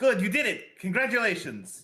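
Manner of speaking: really genuine, bright, sing-song. Voicing Ignacio congratulating the others after the kill: Ignacio, really genuine. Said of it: "in a really genuine way going to be like".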